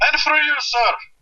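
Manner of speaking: put-on high, eccentric Indian accent. Describing the owner of the local Subway greeting customers: eccentric Indian accent. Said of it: "the most eccentric Indian accent I think I've ever heard".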